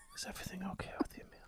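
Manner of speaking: near-silent, barely-there whisper. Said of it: "He was the quietest man in the world".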